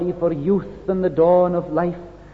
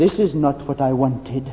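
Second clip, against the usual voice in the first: mock-sad delivery, much lower pitch; 4 semitones lower than usual. Quoting what young people have said to listeners, retelling a sad remark. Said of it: "and said it sadly".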